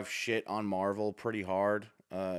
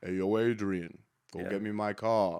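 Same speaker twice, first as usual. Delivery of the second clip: very slow movie-star drawl, every word drawn out. Showing another speaker a Sylvester Stallone voice: Sylvester Stallone impression. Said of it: "That was a mix of both".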